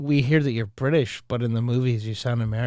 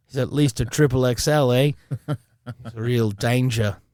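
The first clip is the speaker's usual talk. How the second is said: slow, drawled, put-on Australian accent. Joking about a handler guarding a dangerous actor: put-on Australian accent. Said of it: "have an Australian accent that was really good".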